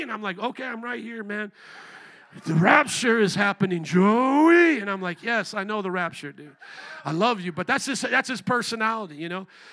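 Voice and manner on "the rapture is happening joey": put-on shout, much louder, slower. A man imitates his father-in-law arriving and calling his name, imitating father-in-law shouting. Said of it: "just at the top of his".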